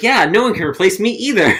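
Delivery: very high, loud voice. Retelling a line from the episode, imitating Penny, really loud. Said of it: "like, really loud".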